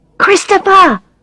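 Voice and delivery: loud stage whisper, pitched very high. Reading a story aloud, hushing a shouting boy: loud whisper. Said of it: "I whisper loudly".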